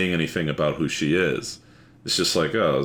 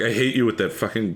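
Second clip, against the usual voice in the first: frustrated, exasperated tone, pitched higher; 5 semitones higher than usual. Retelling a complaint about always using Control T: imitating Joan, frustrated. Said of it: "she's really frustrated".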